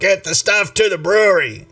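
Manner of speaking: high-pitched, loud yelled shout. Narrating a half-goat, half-man creature leading a group: yelling. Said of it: "he's yelling".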